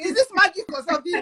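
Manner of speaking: put-on Nigerian accent. Retelling own question to her after the first session, in a nigerian accent. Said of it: "That's Nigerian accent".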